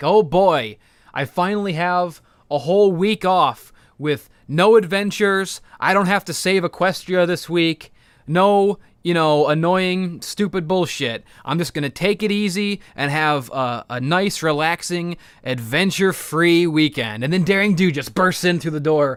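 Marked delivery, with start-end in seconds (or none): none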